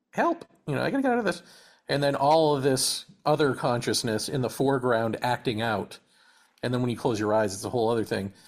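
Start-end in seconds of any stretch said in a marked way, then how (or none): 0.1-1.4 tiny, very high, rushed little background voice. Describing a shroom trip, voicing a part of himself in a tiny voice. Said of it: "as a tiny voice going".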